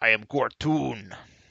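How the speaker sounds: put-on bugbear monster character voice. Voicing the bugbear as it awakens and says who it is, bugbear character voice. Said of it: "the bugbear says".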